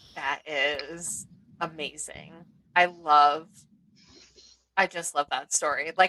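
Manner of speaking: moved, slow, fighting off tears. Speaker reacts to a story they love, holding back tears. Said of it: "I'm trying to hold back tears".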